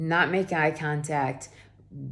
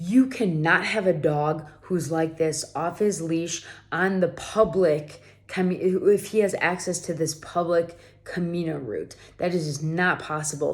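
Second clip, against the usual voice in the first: normal talking voice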